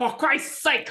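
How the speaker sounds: high mock yell.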